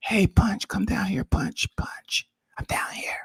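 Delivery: faint, distant, whispered calling voice. Mocking a caller who sounded far off: imitating a voice from beneath the stairway. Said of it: "talking from beneath the stairway".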